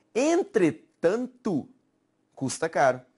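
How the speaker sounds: brief pause following the word "entretanto". Showing how people say a sentence with a comma, pause after entretanto. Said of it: "falam assim, ó ... Há essa pausa, na verdade".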